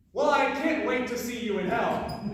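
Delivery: ordinary delivery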